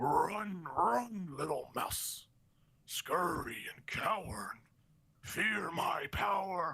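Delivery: very slow, drawn-out monstrous creature voice. Voicing a beast whose voice cascades across the landscape: voice of a laughing beast. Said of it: "you hear the voice of this, this beast speak".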